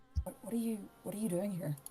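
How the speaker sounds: very quiet, hushed, voice kept right down. Voicing a character who approaches the others and asks what they're doing: keeping voice down. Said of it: "keep their voice down".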